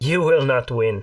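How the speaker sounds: taunting female voice laced with cackles. Game master voicing a voice the players hear in their minds, cackling female voice. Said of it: "a female voice cackling".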